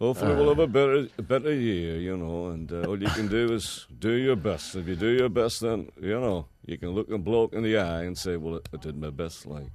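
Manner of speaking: put-on mumbling, mouth barely opening. Describing a man talking to the camera, the speaker imitates him, mouth barely opening. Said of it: "he doesn't seem to open his mouth at all".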